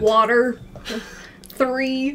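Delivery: put-on Kentucky-accented speech. Retelling a phone call to rural Kentucky, using a put-on Kentucky accent, strong R's. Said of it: "You really emphasized the R's".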